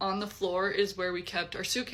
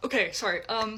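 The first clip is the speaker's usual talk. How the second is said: plain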